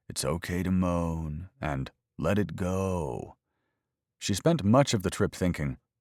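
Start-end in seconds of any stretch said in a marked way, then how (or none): 0.1-3.3 mocking a disgusting, creepy voice. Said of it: "using a disgusting, creepy voice".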